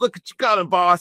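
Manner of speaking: eager, thrilled tone. Retelling a movie scene where a man shoots a turtle, imitating an excited character. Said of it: "He's all excited about the turtle".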